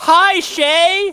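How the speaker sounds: very high, very loud, big exclamation. Reading a viewer's chat message aloud and greeting them back: big exclamation. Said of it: "that's me vocalizing it with a big exclamation".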